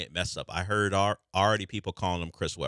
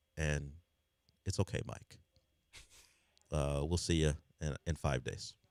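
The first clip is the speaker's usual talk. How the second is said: mock hushed voice, quieter; 2 semitones lower, 8 dB quieter than usual. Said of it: "I needed your hushed tones".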